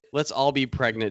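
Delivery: ordinary delivery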